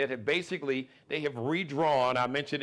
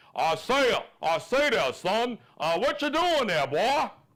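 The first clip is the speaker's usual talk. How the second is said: cartoon drawl, much higher and slower; 9 semitones higher, 4 dB louder than usual. Describing a governor as a redneck cartoon rooster, redneck Foghorn Leghorn voice. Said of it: "More redneck, more country-sounding version".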